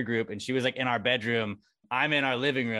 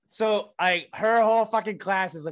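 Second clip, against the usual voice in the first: ordinary talk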